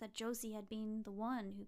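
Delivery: plain reading voice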